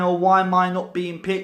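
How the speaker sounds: ordinary delivery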